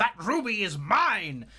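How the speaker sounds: frantic, high, desperate yell. Voicing a villain who yells in desperation: desperate yell. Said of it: "in desperation, he's gonna yell".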